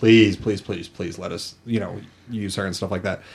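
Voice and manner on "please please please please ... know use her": usual speaking voice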